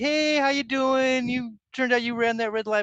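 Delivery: put-on upbeat, easygoing, high, friendly cop voice. Retelling being pulled over after running a red light, imitating a smiling cop. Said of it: "with a big old smile on his face".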